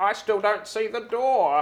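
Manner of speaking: high grandma character voice. Voicing Grandma in the scene as a door appears: voicing Grandma. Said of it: "and Grandma will be like".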